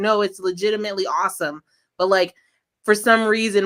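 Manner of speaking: ordinary talk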